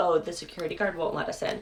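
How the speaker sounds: ordinary talk, nothing marked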